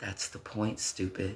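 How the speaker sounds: whispering. Speaker retells what their squad whispered to them, whispered. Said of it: "gave me a little grin and whispered to me".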